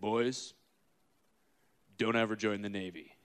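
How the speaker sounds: soft, deep, rough, gravel-bottomed rumbling voice. Retelling what a man told the boys, imitating his deep, gravelly voice. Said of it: "he had a deep, gravelly voice".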